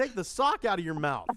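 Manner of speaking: loud, announcing pop-up assistant voice. Acting out Clippy popping up to offer help: Clippy voice. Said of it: "Clippy pops up".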